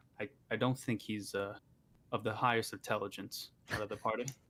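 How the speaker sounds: whispering. Whispering to another party member about a character: whispering to another character. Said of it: "I'll try to whisper to Whisper Mouse".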